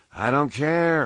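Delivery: smothered voice. Mitson, urged from his bunk to report to his station, answers, muffled by a pillow. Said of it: "his voice muffled by the pillow".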